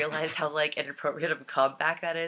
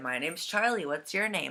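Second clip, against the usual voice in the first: ordinary talk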